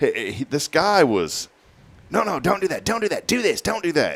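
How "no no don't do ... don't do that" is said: put-on very high, pushy, aggressive bossy voice. Retelling a flight instructor's orders: imitating an aggressive instructor. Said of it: "it was just aggressive".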